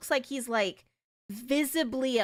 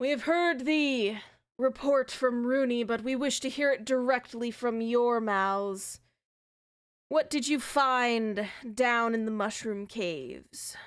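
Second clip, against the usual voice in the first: rough, gruff voice with find drawn out. Game master voicing Agrim of the council, questioning the players: Agrim's gruff tone. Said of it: "in a gruff tone".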